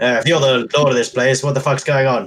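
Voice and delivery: full loud shout. A player in character demands answers of the lord of this place: shouting. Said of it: "I was just going to shout".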